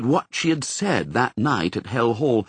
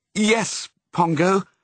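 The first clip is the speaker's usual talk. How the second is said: cheerful tone; 6 semitones higher than usual. She answers pongo, who hopes they will be home for christmas, gaily.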